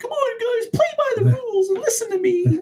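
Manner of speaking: pitch way up, prim goody-goody, by-the-book voice. Mocking a character as an annoying Boy Scout: imitating Cyclops. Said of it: "he's like Leonardo. Like".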